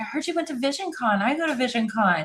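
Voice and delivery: eager, excited, gushing delivery. Retelling how an inmate greeted a jail worker: imitating someone all excited. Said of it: "all excited".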